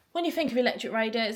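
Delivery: plain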